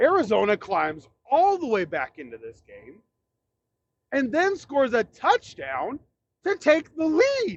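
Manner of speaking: voice cracking. Speaker recapping a football game, voice cracking. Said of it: "Sorry for the voice crack there".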